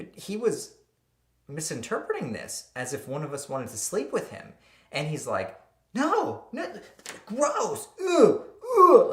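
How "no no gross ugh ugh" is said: put-on very loud, very high, very drawn-out babyish whine. Retelling a friend refusing help: imitating someone whining like a baby. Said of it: "He was like a big baby".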